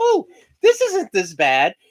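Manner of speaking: contented, happy, swooping sing-song, slow and unhurried. Acting out a candy eater's first reaction: imitating someone all happy. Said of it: "all happy".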